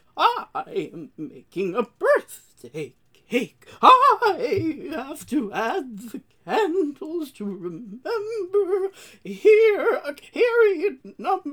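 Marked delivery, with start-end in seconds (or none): 0.2-8.9 very high, shrill, over-the-top exaggerated old woman voice. Acting out her birthday joke as she did it: bad exaggerated old woman voice. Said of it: "she put on the worst old woman voice I have ever heard".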